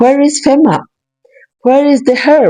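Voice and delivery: mock weepy, tearful, crying voice. Retelling a woman in flood water pleading for help: imitating someone crying. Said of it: "with her phone crying".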